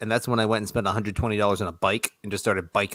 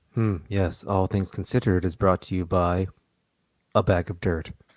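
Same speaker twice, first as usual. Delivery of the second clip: fake calm public radio voice; 2 semitones lower than usual. Doing a mock radio sign-off and sponsor message: fake NPR voice. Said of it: "fake N P R voices aside".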